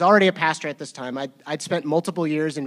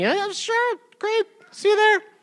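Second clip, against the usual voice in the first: very high, half-hearted, half-meant tone. Speaker recalls agreeing to meet up after a long while without a dust-up; imitating a high half-hearted reply. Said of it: "like when you're like half like saying".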